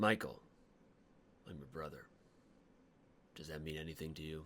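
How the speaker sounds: very quiet, soft, hushed character voice. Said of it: "I sound like Job from Arrested Development".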